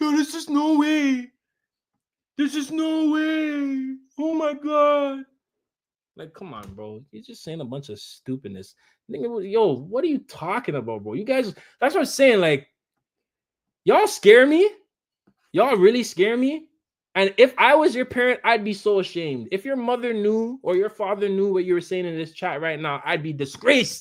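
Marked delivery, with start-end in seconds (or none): 0.0-5.2 mocking high-pitched chatter voice. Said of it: "That's how he sounds".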